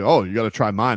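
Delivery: mock cocky, boastful voice. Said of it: "they'll be".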